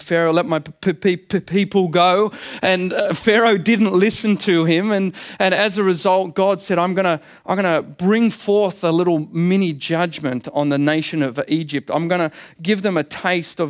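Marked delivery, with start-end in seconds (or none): 0.0-2.3 halting, repeated p at the start of "people". Speaker retells the Passover story, quoting Moses before Pharaoh with a stutter. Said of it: "stuttering Moses had gone up and said".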